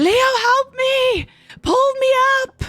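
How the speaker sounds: very high, drawn-out, pleading screaming. Narrator voicing a character caught by the undead, calling to Leo, screaming for help. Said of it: "So she starts screaming".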